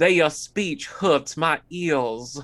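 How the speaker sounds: put-on Old South accent. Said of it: "Shannon Doherty's Old South accent".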